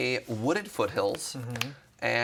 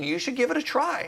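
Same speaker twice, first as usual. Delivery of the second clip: play-acted, shrill, very high scream; 11 semitones higher than usual. Describing two sides of himself, one urging him on, imitating a scream. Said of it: "one of them was screaming".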